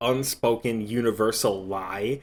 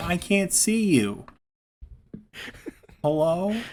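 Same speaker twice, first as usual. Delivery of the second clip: put-on high old woman voice; 8 semitones higher than usual. During a call with a co-host, imitating a grandma on FaceTime. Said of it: "like a grandma on FaceTime".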